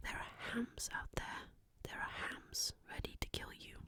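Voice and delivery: very hushed, soft-spoken half whisper. Signing off and telling everyone to take care before christmas: soft-spoken whispering. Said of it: "a mix between soft-spoken and whispering".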